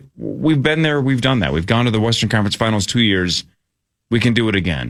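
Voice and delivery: ordinary talk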